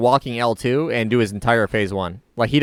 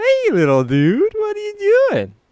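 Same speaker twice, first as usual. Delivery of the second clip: put-on high sing-song baby talk. Acting out how people talk to him as if he were a baby: baby talk. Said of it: "Talk to him like you're a fucking baby".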